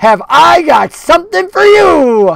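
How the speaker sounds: very high, loud cackling puppet voice, "you" stretched out. Narrator reads a puppet that moves with no one controlling it, cackling Slappy voice. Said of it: "the cackling voice comes from within it".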